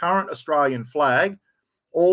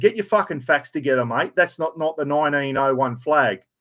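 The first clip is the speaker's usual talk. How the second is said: ordinary talk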